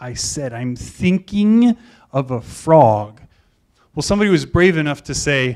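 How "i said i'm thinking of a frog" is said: acted, enigmatic, slow, drawn-out, mysterious pronouncing delivery. Retelling what a teacher said from the corner: imitating a mysterious tone. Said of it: "he's all mysterious".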